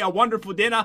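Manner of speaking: ordinary talk, nothing marked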